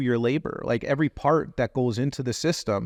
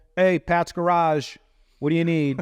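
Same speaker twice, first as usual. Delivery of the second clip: mock bored, uninterested, pitched-up voice; 5 semitones higher than usual. Showing how a garage might answer the phone: imitating a can't-be-bothered answer. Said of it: "it sounds like they couldn't be bothered".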